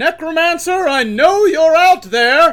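very loud, high-pitched, far-carrying yell. A voice calls from a chariot to a necromancer hiding nearby, yelling. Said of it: "why are you yelling so early in the morning?".

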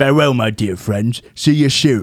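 bad, fake put-on British accent. Signing off the show with a farewell: bad british accent. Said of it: "That was my bad British accent".

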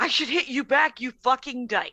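ordinary delivery

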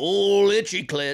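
put-on old-timer gold rush prospector character voice. Chatting about a ranch, the speaker imagines an old prospector; old prospector voice. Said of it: "imagine an old prospector being like".

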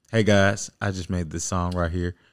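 low, soft, dead serious deadpan delivery. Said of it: "so serious".

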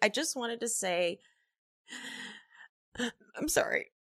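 mock choked-up, emotional-sounding voice. Retelling how a castmate covered forgotten lines: imitating a fake choked-up voice. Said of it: "he pretended to be choked up".

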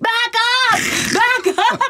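play-acted very high, shrill, repeated screaming. Retelling screaming at their sister as a buffalo charged the car, retelling a scream.

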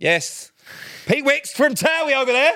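put-on very high, shrill shout. Retelling how Sam announced a celebrity to passing shoppers: imitating Sam shouting. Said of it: "shouting at people".

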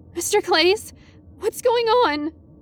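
mock, very high, squeaky, terrified, frightened squeak. Narrator asks their physics teacher what is going on, squeaky and terrified. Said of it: "immediately embarrassed by how squeaky and terrified my voice came out".

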